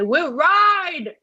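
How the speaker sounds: shrill high yell, mouth full, "ride" drawn out. Retelling the speaker's own yell before jumping on someone's back: retelling a yell. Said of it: "I yell to Kevin".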